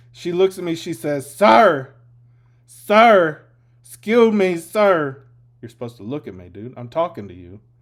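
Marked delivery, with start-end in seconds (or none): 1.3-7.6 mock drunk woman voice, louder. Retelling what a drunk passenger said on a ride: imitating a drunk woman.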